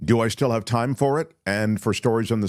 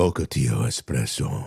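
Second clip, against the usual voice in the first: deliberately deep, very low voice; 11 semitones lower than usual. Asked by the other speaker to say a phrase in a deliberately deep voice. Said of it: "Say Ocotillo espresso in your deep voice".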